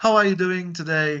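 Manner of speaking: high, beaming, overly friendly American voice.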